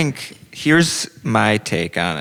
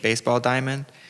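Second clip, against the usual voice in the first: normal talking voice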